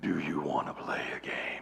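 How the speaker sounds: very deep, low horror-villain voice. Correcting an earlier attempt, doing the Saw villain impression again. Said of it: "It's more like".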